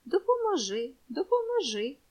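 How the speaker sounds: said through a smile. An old woman accepts a boy's offer to help her, smiling. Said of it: "усміхається старенька".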